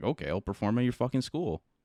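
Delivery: ordinary delivery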